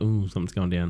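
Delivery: normal talking voice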